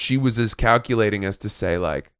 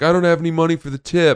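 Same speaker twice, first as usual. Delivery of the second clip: put-on mocking voice, higher and louder; 7 semitones higher, 4 dB louder than usual. Retelling a player's on-court jab about tipping: mocking Sampras impression. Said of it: "Agassi starts pulling his pockets out and being like".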